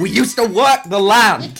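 play-acted line cracking into a high-pitched scream. Recalling a comedian's bit, the speaker retells his line with a scream. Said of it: "breaks off halfway through it and screams".

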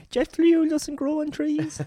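high-pitched, slow voice with every word stretched. Joking about airline fuel charges: Michael O'Leary impression. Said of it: "That was a good Michael O'Leary impression".

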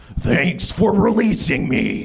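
strong, forceful, powerful creature voice. Narrator voicing a vine creature thanking those who released it, powerful voice. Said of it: "It speaks in a powerful voice".

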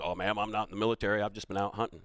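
teasing, mocking put-on voice. Friends at a table keep repeating a remark; mocking impression of someone. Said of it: "We did the voice and everything".

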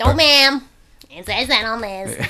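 dubious, fake, put-on American accent. Comparing countries, imitating how Americans would respond, put-on American accent. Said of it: "what accent was that?".

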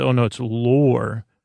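usual speaking voice

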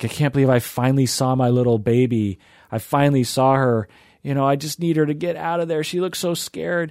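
mock crying, imitated. Retelling what a crying mom said, imitating someone crying. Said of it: "She's crying".

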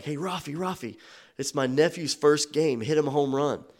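acted-out high hollered call, drawn out. Retelling his uncle calling to a player across a parking lot, retelling a scream. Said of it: "he screams out".

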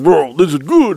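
loud caveman voice. Retelling what Misha's brother said in the shower: imitating Matt as a giant caveman. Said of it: "like this giant caveman".

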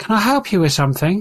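tiny, high-pitched goblin voice. Voicing a goblin who speaks up behind a player: little goblin voice. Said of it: "a little voice behind you say".

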